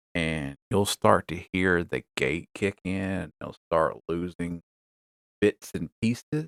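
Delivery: soft, distant voice, far from the mic. Demonstrating a noise gate from two feet off the mic: talking softer, far off-mic. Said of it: "I'm going to start talking softer".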